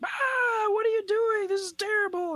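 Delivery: acted-out very high shrill yell, "what" drawn out. Speaker recalls watching something terrible: retelling shouting at the TV. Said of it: "shouting at the TV going".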